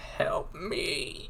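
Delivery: screeching metallic voice. A game master voices a creature calling from the woods, rusty metallic screech. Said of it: "screech out in its rusty metallic voice".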